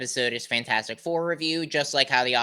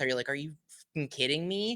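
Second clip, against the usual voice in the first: frustrated half-whisper under the breath; 3 semitones higher, 7 dB quieter than usual. Retelling a groan at a trailer before a movie: retelling a half-whisper under breath. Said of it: "I whispered under my breath".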